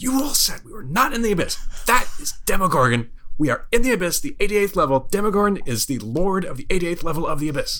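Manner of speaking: very intense, high stage whisper. During a tabletop roleplaying game, voicing Balmo to the party: Balmo's intense stage whisper. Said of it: "in a very intense stage whisper".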